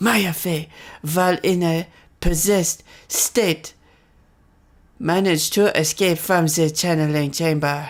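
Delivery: put-on German accent slipping into French accent. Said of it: "My German is slipping into French".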